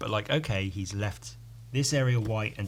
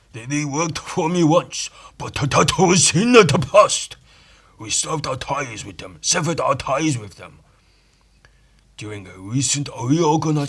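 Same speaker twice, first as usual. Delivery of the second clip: loud, high put-on Japanese accent; 6 semitones higher, 11 dB louder than usual. Reading comic dialogue aloud: stereotypical japanese accent. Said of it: "That's how you have to read the entire comic".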